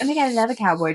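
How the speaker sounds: play-acted flirty cute voice. Recounting flirting with a date over FaceTime, retelling a flirty cute voice. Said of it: "just being a little flirty, a little cute".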